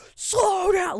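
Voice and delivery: all-out furious screaming, very high pitched. Recounting a car blowing through a sidewalk, acting out an angry scream at the driver. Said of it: "Like I'm screaming at this guy".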